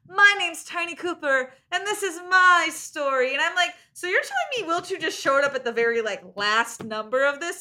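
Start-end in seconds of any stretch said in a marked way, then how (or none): 0.2-3.4 big, loud, high-pitched yell. Speaker recounts a character yelling from the rafters on stage, retelling a yell. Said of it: "he's like yelling".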